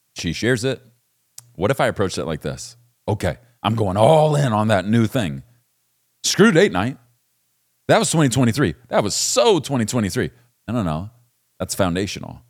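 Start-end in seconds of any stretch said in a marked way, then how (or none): 3.0-10.3 put-on loud, swooping sarcastic delivery. Acting out a hypothetical reply to a wife's new request: put-on sarcastic tone. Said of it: "Let me kind of sarcastically paint the picture".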